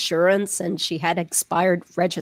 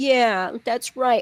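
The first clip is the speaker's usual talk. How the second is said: put-on babying, indulgent, soothing and coddling tone of agreement; 4 semitones higher than usual. Retelling how Donna talks to him on a phone call: imitating Donna's coddling tone. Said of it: "the way Donna talks to him, it's so, like, coddling".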